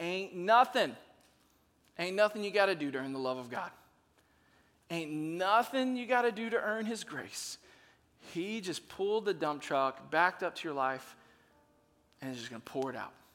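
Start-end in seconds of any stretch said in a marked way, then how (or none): 0.0-7.6 easygoing, relaxed, slight southern drawl. Speaking to listeners, letting a little southern drawl hang out. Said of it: "Let my little southern drawl hang out".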